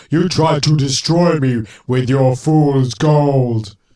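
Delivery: loud, booming, terrible robot voice, "gold" drawn out. Responding to a story about fool's gold, a speaker jumps in: terrible Cyberman impression. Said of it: "[name]'s impression of a cyberman that was terrible".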